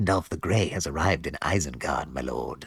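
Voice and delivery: hushed, close half-whisper. Voicing the penguin toy speaking to its lord: imitating a half-whisper like Wormtongue. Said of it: "whispering in our ear like Worm Tongue".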